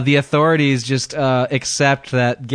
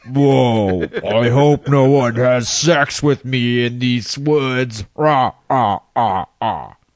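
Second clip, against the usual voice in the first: put-on alien creature voice. Joking about walking through the woods: Predator replaying a recorded voice. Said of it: "the Predator replaying your own recorded voice".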